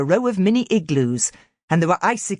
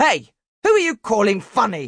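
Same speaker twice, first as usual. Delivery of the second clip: rough, gruff, barked out; 3 semitones higher than usual. Reading a story aloud, Paulie calls from the edge of the pool: gruff barking voice. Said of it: "Barked a gruff voice".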